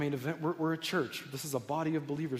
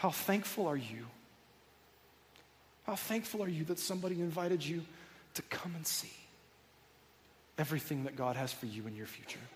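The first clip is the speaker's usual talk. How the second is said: tearful, much quieter, close to crying; 4 dB quieter than usual. Speaker asking listeners how thankful they are, tearful. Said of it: "before I cry some more".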